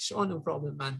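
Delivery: big guy's sweet, cuddly teddy-bear tone. Retelling how a huge gym-goer answered a request: imitating a teddy bear voice. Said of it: "he had the voice of a teddy bear".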